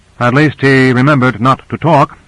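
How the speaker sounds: plain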